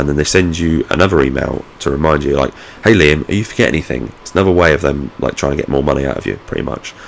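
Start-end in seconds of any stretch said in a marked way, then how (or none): none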